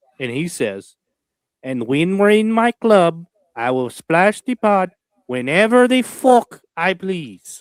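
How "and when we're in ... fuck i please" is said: loud, high, slow, drawn-out character voice. Quoting a movie line as the third quote: KGB impression. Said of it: "give you a really good K G B impression".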